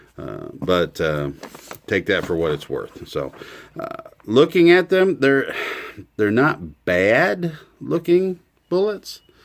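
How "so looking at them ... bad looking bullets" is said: halting, unsure, hesitant, slightly raised voice. A reviewer describing how the bullets he counted look: hesitant. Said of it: "you can maybe hear the hesitancy in my voice".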